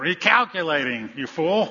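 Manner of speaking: mock nasty tone. Telling how the Garmin's voice reacts when they mess up, mock-nasty Garmin voice. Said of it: "again in a nastier way".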